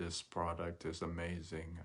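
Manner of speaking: dead level, flat, emotionless monotone drone. Imagining being the speaker on stage before an audience: flat monotone voice. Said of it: "I just have this face and this monotone voice, and I say".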